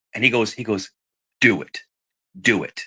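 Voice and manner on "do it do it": low, slow, menacing, deliberate, intimidating voice. Retelling a priest urging reconnection: imitating an intimidating priest. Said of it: "almost intimidating me".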